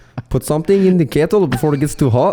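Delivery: high, botched put-on accent verging on Russian. Trying to say the kettle line in an accent for a co-host: bad put-on accent. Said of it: "No, that's horrible".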